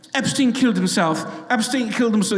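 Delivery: put-on British accent, said over and over. Retelling what British journalists kept saying on a driveway: British accent. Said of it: "With a British accent".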